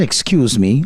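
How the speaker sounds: ordinary talk, nothing marked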